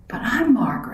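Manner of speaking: gasping. The narrator protests when told margaret will be fetched, gasped. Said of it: "I gasped".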